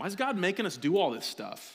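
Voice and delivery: put-on cynical teenager voice. Recalling their teenage self, speaker uses a mock-cynical teenage voice. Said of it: "my own cynical voice as a teenager".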